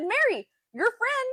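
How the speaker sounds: excited calling out.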